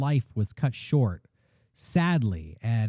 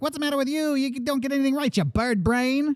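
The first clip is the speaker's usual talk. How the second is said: put-on high-pitched, fast, old-timey gangster old man voice; 13 semitones higher than usual. Imitating an old-timey grandpa arguing with you, in an old-timey gangster voice. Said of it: "he spoke like a gangster".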